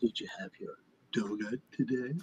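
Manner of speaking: mock, very soft, hushed, patronizing, condescending voice. Repeating back the other speaker's question: imitating Peter's patronizing tone. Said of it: "patronizing tone in which you asked".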